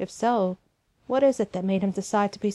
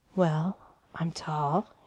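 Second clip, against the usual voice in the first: softer, quieter voice, much slower pace; 3 semitones lower, 4 dB quieter than usual. [name] answers Jensen's question about what he looks like; quieter.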